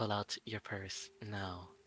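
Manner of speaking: soft, hushed half-whisper under the breath. Narrating a scene, voicing a woman's line to another woman: half-whispering. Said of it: "she she whispers".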